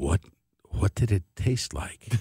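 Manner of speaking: very quiet, barely audible whisper. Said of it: "in barely an audible whisper".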